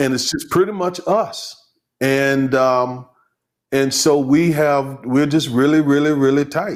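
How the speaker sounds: choked-up voice catching with emotion. Describing a close-knit family to another speaker, choking up with emotion. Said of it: "So I'm choking up again".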